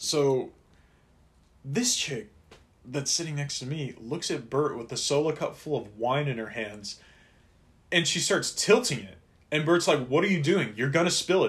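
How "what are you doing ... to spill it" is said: mild, loose, scolding half-yell. Retelling how Bert yelled at a girl tilting her wine cup, retelling a yell. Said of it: "he's yelling at her at this point".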